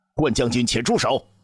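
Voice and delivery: rushed, urgent, high-pitched shout. A man jumps up to stop a general's sword thrust at another man; hurried shout. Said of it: "严柱忙起身喊道".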